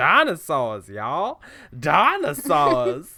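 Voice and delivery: loud, animated, sing-song, swooping cartoon-character voice. Imagining a costumed job outside the Jurassic Park gate, calling to passersby: Jurassic Park DNA strand voice. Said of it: "professional voice imitator of the D N A strand from Jurassic Park".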